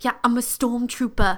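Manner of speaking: put-on over-the-top British accent. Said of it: "really intense British accent".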